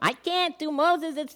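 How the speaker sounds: Yiddish-inflected accent, played for laughs. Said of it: "I know how that accent works".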